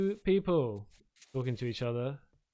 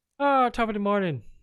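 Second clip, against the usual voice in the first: very loud, fake Irish brogue, pitched up; 8 semitones higher, 8 dB louder than usual. Voicing a character the player imagines as Irish: put-on Irish accent. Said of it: "Irish, but I'm not gonna ask you to do that accent".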